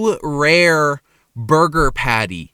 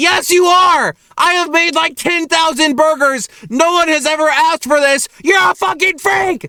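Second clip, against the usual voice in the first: high, loud, heated furious shout. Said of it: "Sorry, I'm getting really heated".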